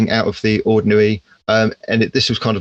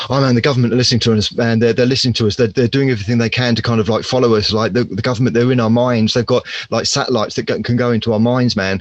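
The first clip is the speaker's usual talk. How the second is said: plain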